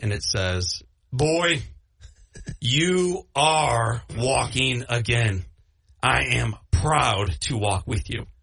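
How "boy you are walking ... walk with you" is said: acted big booming voice, very slow and deep. Speaker retells a voice heard from behind, like god's, in a big booming voice. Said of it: "this big booming voice behind me".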